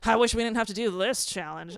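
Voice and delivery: mock, exaggerated sarcastic delivery. Imitating a contestant's complaint about a challenge: imitating performative sarcasm. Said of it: "performative sarcasm".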